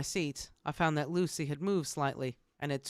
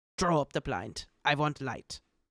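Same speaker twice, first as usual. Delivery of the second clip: sharp, hissed whisper. Reading a novel aloud, a doctor asks for light: sharp whisper. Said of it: "he said to me in a sharp whisper".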